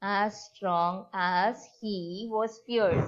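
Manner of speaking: "as strong as" slow, each word heavily marked. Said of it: "Here it is a positive degree".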